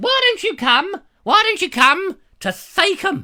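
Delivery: very high, loud screeching call. Retelling an invitation from Cynthia, imitating Cynthia's screeching voice. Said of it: "stop screeching at me, woman".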